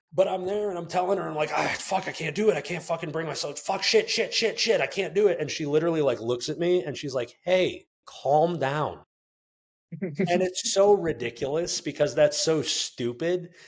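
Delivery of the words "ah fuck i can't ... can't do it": acted frantic, panicked swearing outburst. Recalling failing to regulate breathing while telling her about it: retelling own panic attack. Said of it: "in the midst of like a panic attack".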